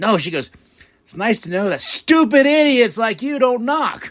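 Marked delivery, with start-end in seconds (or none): 1.0-4.1 very high, shrill, loud, sudden yelling outburst. Recounting what Bayley said to Lyra; retelling Bayley yelling. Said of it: "she yells at Lyra".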